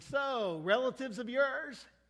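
thick sarcasm. Retelling a husband's remark to his wife as they pass a farm, retelling a sarcastic remark. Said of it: "the husband just said very sarcastically".

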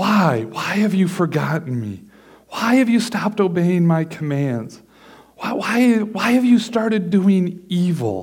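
mock wounded, hurt, pleading tone. Voicing god questioning his people, voicing god pleading. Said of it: "he's really pleading with his people".

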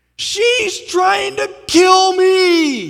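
very high, very loud, shrill, drawn-out scream. Retelling a child clinging to the pool side screaming out loud: imitating Brandon screaming. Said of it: "and he screams out loud, he goes".

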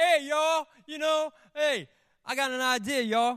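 mock, loud, high, annoying-guy voice. Speaker mimicking a man who usually drives people nuts, imitating a loud guy. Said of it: "he's got the loud voice".

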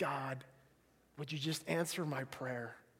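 quiet, low, soft voice.

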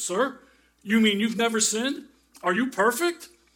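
startled, taken-aback, very loud high cry. Telling a joke, speaker voices the minister after a man stands, startled minister. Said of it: "the startled minister said".

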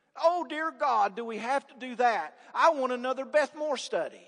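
acted grudging grumble, heavily sarcastic. Imitating people who treat the Great Commission like a curse: put-on sarcastic complaint. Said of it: "Sarcasm intended".

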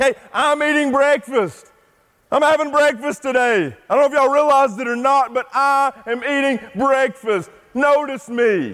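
high-pitched put-on shout. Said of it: "you've gotta shout to the world".

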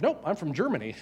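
put-on, imitated British accent. Retelling a woman's answer to a question: imitating a british accent. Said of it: "in this perfect British accent".

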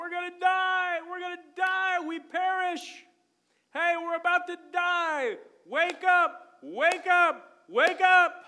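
very loud, very high, drawn-out panicked crying. Retelling the storm story, the speaker acts out the men waking Jesus, crying out. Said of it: "And they're crying out".

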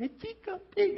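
very high, wheedling, little begging voice. Retelling how a daughter asks for a teacup pig: imitating daughter's begging voice. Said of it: "stop that voice".

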